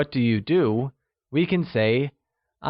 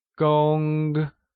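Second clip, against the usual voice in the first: gong said with a high, flat level tone. Mandarin lesson on the word for engineer, high level tone on gong. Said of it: "pronounced using a high-level tone".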